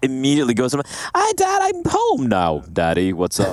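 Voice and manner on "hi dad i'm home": put-on very slow, high squeaky child voice with swooping pitch. Teasing the other speaker about his childhood voice: imitating a squeaky kid voice. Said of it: "you were a bit of a squeaker".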